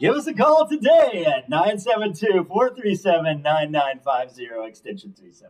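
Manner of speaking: put-on, loud, swooping radio announcer delivery. Speaker showing the announcer voice someone else did not do, announcer voice. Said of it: "That's the announcer voice".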